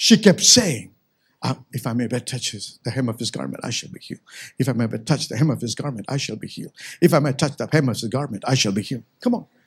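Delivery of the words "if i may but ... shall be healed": mock muttered whisper, lower and quieter. Retelling the woman with the issue of blood: imitating muttering under breath. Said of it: "under her breath".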